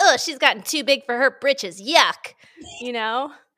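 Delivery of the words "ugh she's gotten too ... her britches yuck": loud, snide, gossipy reality-TV talk-show host voice. Mocking fans who turn on a reality star: Andy Cohen voice. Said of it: "doing my Andy Cohen voice".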